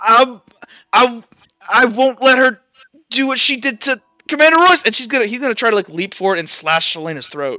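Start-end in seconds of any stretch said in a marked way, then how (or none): 0.0-4.8 crying, choked-up, tearful voice, high and raised. Voicing a character clenching a dagger and crying: tearful character voice. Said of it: "crying here".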